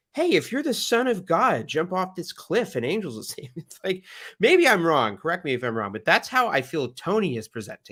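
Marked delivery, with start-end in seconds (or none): 0.2-3.7 high, earnest devil voice. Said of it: "was earnestly being like".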